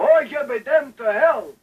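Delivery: put-on shrill, high-pitched old man voice. Retelling a grandfather shaking his fist and scolding: imitating Grandpa's old man voice. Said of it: "His old man voice".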